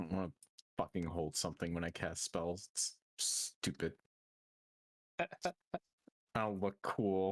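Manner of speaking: griping, grumbling complaint muttered to herself. Narrating a character who looks over items, then grumbles to herself. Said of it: "She kind of grumbles to herself".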